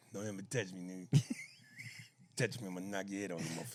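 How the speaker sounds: very low, menacing voice pushed out through clenched teeth. Doing an impression on request, threatening not to be touched: Charlie Murphy impression. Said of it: "Could you do that in Charlie Murphy?".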